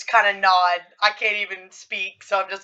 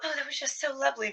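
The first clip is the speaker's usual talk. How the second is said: very soft, high-pitched, feigned delight; 6 semitones higher, 10 dB quieter than usual. Playing a game character sipping a drink, voicing feigned delight. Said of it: "I'm just like".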